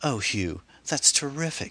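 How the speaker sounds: very high, effusive, gushing delight. Reading a story where a woman hears she may get a part: gushing. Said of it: "Sarah would gush".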